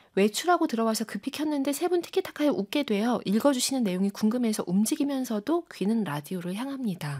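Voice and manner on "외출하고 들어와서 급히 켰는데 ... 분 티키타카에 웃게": usual speaking voice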